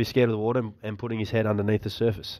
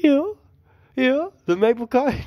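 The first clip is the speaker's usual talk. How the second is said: very high-pitched, mocking put-on dog voice. Speaker describes a YouTube video mocking a dog, mocking dog voice. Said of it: "humans like mocking his voice".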